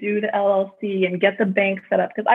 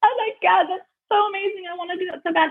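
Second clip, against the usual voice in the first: mock very high, teary, crying gush of awe; 10 semitones higher than usual. Speaker retells watching HGTV in their room at the show's end: retelling crying at a TV show. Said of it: "literally crying at the end of".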